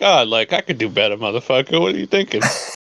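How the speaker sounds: acted-out, upset, frustrated sports fan griping rant. Mocking the other speaker's reaction to the ball game: mock upset sports fan rant. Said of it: "you're talking like you're like".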